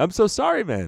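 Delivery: put-on South African accent, pitched way up. Retelling how Carl apologized after the shot, in Carl's South African accent. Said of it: "his South African accent apologizing".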